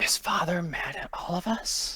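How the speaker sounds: hushed, harsh, breathy whispery voice. A character in the story speaks near the god of war; harsh, whispery voice. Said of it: "she says in like a harsh kind of like whispery voice".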